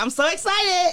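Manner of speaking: mock thrilled, very high-pitched, excited gush. Retelling a friend's call about his new launch, imitating excited friend. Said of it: "He was like".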